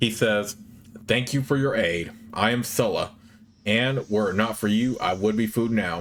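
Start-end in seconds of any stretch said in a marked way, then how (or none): none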